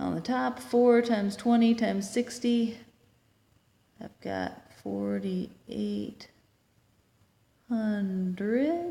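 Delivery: talking slowly. Working through a calculation while writing it out, talking slowly. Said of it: "I'm talking slow".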